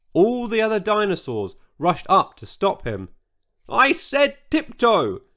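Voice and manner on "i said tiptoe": high, loud yelling in a character voice. George, as the dinosaurs rush to stop the dancing Sizo: yelling. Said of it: "yelled George".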